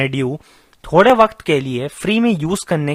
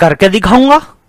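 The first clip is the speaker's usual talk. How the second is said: very loud, raised, high-pitched shout; 5 semitones higher, 9 dB louder than usual. Arguing over what is his, a man answers a challenge, shouting. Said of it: "चिल्ला क्यों रहे हो?".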